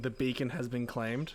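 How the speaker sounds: plain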